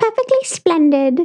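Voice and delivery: put-on very high, proper little girl voice. Talking about The Haunting of Bly Manor, quoting the little girl: imitating a little girl. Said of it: "how the little girl's like".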